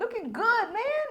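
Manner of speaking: high, loud, exaggerated admiring hype-man catcall.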